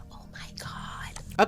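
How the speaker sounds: whispering. A mother recalling her daughter's news on the phone, retelling her own whisper. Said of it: "And I started whispering".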